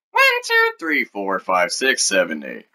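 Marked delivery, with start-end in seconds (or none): 0.2-1.1 high, squeaky cartoon mouse voice, swooping pitch. A video host proving he uses no voice changer, in a Mickey Mouse voice. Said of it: "Mickey Mouse".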